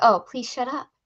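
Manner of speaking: ordinary delivery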